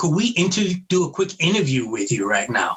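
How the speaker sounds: imitated broken-English speech. Retelling how an interviewer approached at a table: imitating broken English. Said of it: "she comes up to me in broken English".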